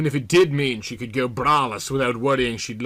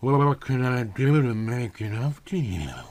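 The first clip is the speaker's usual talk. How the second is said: slow, husky drawl. A computer voice addresses a man before he can give a command, Callie Lucent husky drawl. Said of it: "asked in a husky drawl that sounded like she'd been positively gargling straight tequila".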